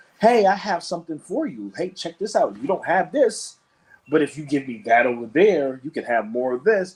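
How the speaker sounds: mock smooth, friendly, salesman-like charm. Acting out traders offering a deal: imitating friendly traders. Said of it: "came with the friendly face".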